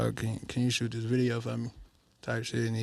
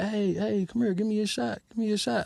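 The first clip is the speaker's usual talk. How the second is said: play-acted high, loud screaming; 10 semitones higher, 4 dB louder than usual. Retelling a girl calling out a car window: imitating a girl screaming. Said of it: "this girl just screaming out the window like".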